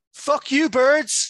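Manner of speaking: very high, shrill, loud jeering and taunting shout. Retelling a driver yelling from a car window: imitating someone shouting. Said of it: "shouts out the window".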